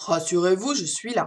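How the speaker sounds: big, hefty, deep voice. Reading an animal story aloud, voicing an unseen rescuer with a big voice. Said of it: "dit une grosse voix".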